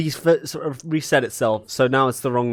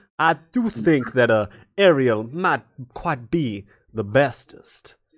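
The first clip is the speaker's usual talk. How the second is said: fake Southern American accent, slower. Saying a requested line about a streamer, in a bad southern american accent. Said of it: "it's Southern American".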